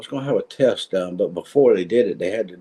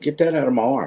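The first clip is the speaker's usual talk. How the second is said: put-on rough barking voice, higher pitch; 4 semitones higher than usual. Retelling ordering a nurse to stop: imitating a rough barking voice. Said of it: ""I'm barking at you" voice".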